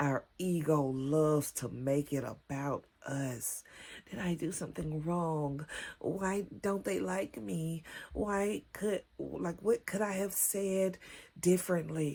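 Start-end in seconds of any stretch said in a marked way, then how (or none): 4.1-12.2 put-on whiny voice. Speaker acts out their ego's self-doubting questions, in a mock-whiny inner voice. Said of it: "my inner whiny ass voice".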